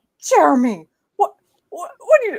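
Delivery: high, swooping, flustered yell, stuck on repeats. Retelling correcting someone who said a word wrong: imitating her own past yelling. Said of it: "Jessica's yelling at me".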